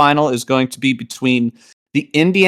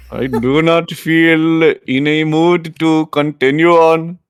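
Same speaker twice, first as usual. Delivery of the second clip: sad, mopey, melancholy put-on Indian accent; 3 semitones higher than usual. In a bit about a man not taken seriously, do a melancholy indian impression. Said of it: "doing a melancholy Indian impression".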